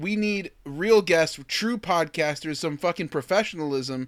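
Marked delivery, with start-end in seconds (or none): none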